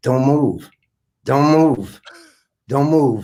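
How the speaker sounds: put-on muttering under the breath. Retelling a stage partner's quiet onstage instruction: imitating someone muttering under breath. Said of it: "under his breath, he said".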